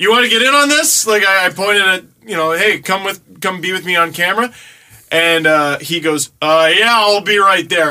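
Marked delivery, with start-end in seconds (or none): 6.4-7.9 mock sarcastic tone, louder. Recounting inviting someone to come be on camera with him: retelling a sarcastic reply.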